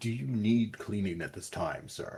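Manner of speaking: hushed mutter under the breath. A narrator voices a man speaking into a doorway: muttering. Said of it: "you can hear him mutter into the doorway".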